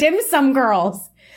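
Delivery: high, loud gushing enthusiasm.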